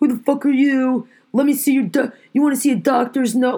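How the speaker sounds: imitated screaming. Retelling what customers say back about masks: imitating customers screaming.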